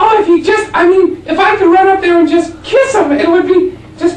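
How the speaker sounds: very high, loud, gushing, swooning female fan voice.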